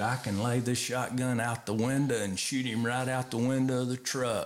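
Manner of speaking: normal talking voice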